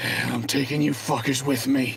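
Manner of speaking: out of breath, barely any breath left. A game master voices a dying enemy pulling out a crystal, speaking with his last breath. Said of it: "with what little breath he has left".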